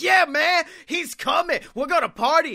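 very high, loud, hyped-up screaming. Retelling Mojo Rawley on the headset with Michael Cole, imitating Mojo Rawley screaming. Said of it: "he's screaming at Michael Cole".

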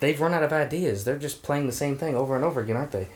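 audible grumbling muttered under the breath. Retelling what a kid kept saying about the film, imitating muttering under his breath. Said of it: "Christopher kept saying under his breath".

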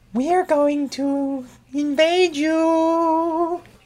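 very high, stretched, eerie, spooky alien voice. Describing what invading aliens would say, in a spooky alien voice. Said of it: "Why do they talk like spooky aliens?".

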